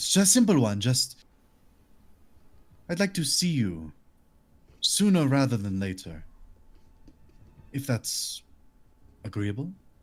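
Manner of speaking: bad put-on French accent. In a role-play, a character asks his brother a favor, in a shitty French accent. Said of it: "I'm doing a shitty French one".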